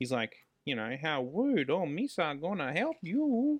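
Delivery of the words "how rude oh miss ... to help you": put-on goofy babyish voice, high-pitched and swooping. Complaining about an annoying man, the speaker imitates his baby-like voice. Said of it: "You do a really good impression".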